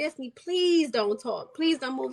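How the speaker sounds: begging, tearful voice. Retelling what her crying older sister said: imitating someone begging. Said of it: "she's just begging me".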